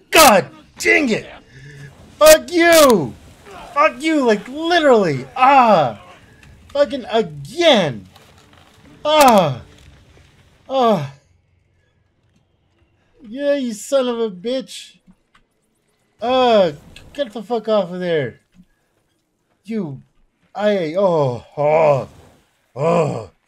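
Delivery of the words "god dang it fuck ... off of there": high, loud, furious swearing outburst. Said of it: "I'm getting angry".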